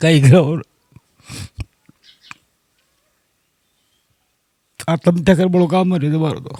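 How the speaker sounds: speaking through tears. Answering a question about what the family will do now, crying while talking. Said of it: "आप रो क्यों रहे हैं?".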